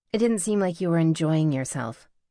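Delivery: ordinary delivery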